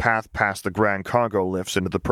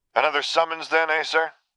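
good-natured, pitched-up teasing tone; 8 semitones higher than usual. A trooper at the lifts speaks to the man approaching him, teasing.

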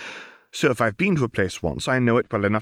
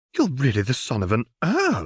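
gasping with delight. Mrs. Pruitt reacts to an introduction at the table, with a delighted gasp. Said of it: "gasped Mrs. Pruitt".

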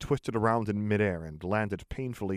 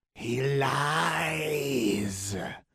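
high, terrible hissing voice, words drawn out; 5 semitones higher than usual. Narrating a tense scene, a voice exclaims in a terrible hissing voice. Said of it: "Exclaimed that terrible hissing voice".

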